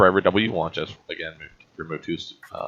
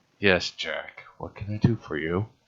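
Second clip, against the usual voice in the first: irritated, frustrated voice through clenched teeth; 4 dB quieter than usual. Retelling how someone, growing frustrated, finally answered Jack, mimicking speech through gritted teeth. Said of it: "his eyes and just through gritted teeth".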